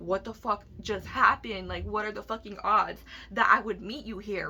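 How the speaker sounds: usual speaking voice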